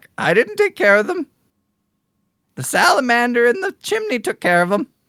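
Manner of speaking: high, fast squawking bird voice. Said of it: "the bird is continuing to squawk".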